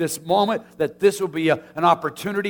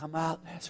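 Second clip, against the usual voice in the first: gentle, very quiet, soft calling voice; 15 dB quieter than usual. Retelling the lazarus story, trying the call in a gentle voice. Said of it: "in a really gentle voice".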